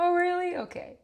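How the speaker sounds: put-on easy, calm, laughing tone, very high. Retelling a partner's reaction to a worry: imitating a laughing, calm reply. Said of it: "He just laughs and he goes".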